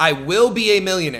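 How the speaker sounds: normal talking voice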